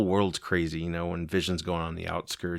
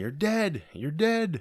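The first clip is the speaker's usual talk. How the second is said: high-pitched screaming. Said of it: "she's screaming at Vision".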